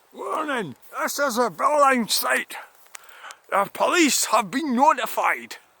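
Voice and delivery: put-on Irish-accented announcer voice, very high. Pointing out a site camera, imitating its recorded warning, in an irish accent. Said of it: "it might do the Irish voice".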